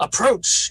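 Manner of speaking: loud, high, commanding, forceful authoritative voice. Voicing a character casting a command spell on an enemy: most authoritative tone. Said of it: "in the most authoritative, uh, tone he can".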